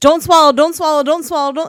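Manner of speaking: fast, high, rattled off. Retelling what he said while looking down at the speaker: saying it really fast. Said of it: "he just kept saying it really fast".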